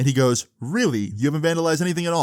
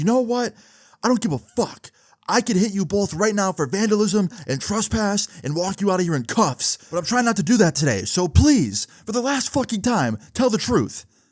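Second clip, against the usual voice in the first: high, snapping, angry outburst, losing patience; 8 semitones higher than usual. Retelling how a cop finally lost patience: imitating a cop snapping angrily. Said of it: "this cop just, like, snaps".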